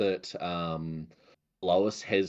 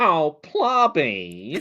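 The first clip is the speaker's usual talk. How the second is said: high, loud voice with big pitch swoops; 8 semitones higher, 9 dB louder than usual. Describing the voice in their head whenever seeing Plobby on Twitch, Linda voice. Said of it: "I have Linda's voice in my head going".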